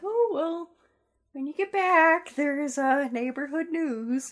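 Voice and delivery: put-on high-pitched elderly lady voice. Retelling what their elderly neighbor said, in an old lady voice. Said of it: "the best old lady voice".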